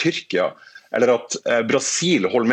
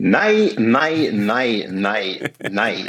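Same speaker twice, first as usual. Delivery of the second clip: loud outdoor voice, heavy stress on every nei. A panelist asked for his answer replies, heavy stress on nei. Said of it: "du la mest trykk på nei-et ditt her".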